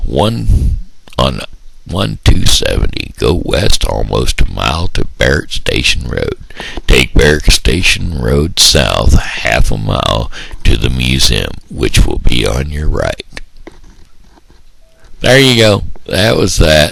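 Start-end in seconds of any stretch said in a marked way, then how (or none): 3.2-13.3 narrator voice reading from a script. Demonstrating their narrator voice by reading museum directions: narration voice. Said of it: "That was my narration voice".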